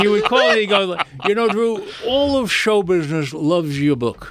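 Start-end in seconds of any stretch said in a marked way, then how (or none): 1.5-4.3 put-on English accent. Recalling Mickey Freeman phoning him, the speaker does Mickey Freeman English accent. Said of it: "he had this English accent".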